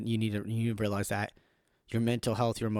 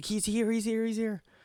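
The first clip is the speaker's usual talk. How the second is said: frantic, very high, panicked yelling; 12 semitones higher than usual. Speaker retelling spotting his vehicle during an emergency, retelling a panicked shout. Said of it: "I was freaking out".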